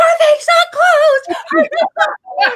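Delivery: very high, shrill, loud, panicked shrieking scream. Sitting with Tanya right before it starts, retelling own panicked screaming. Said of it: "And I start screaming".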